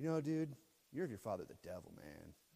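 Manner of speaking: easygoing, chilled-out, mellow, laid-back tone. Imagining him calling someone a child of the devil: imitating a mellow speaker. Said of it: "Maybe he said that in a mellow way. He was like".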